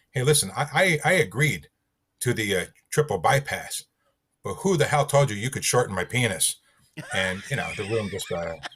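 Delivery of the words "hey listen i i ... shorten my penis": put-on angry, pissed-off voice. Speaker retells confronting his doctor, acting pissed off. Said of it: "So I'm like acting all pissed off".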